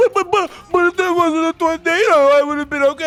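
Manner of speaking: put-on whiny, complaining voice. Imitating a better player complaining about a tornado: Dennis impression. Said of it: "That was my Dennis impression".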